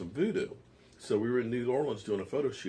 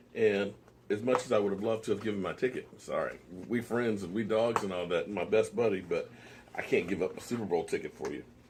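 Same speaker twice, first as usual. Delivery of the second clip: plain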